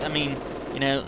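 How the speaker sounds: usual speaking voice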